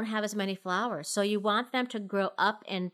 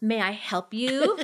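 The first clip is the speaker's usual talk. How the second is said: mock, very slow, pointedly polite, passive-aggressive; 3 dB louder than usual. Retelling confronting a stranger on the lawn: imitating passive aggressive tone. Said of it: "one of those passive aggressive".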